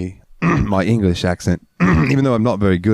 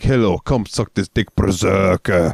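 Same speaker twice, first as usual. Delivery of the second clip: Russian-accented voice. Speaker demonstrates how they talk to the listener, in a Russian accent. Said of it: "because Russian".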